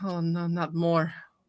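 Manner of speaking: soft, weary, tired put-on vampire voice. Voicing a vampire seated at a table with wine, in a weary character voice. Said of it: "it looks up and goes".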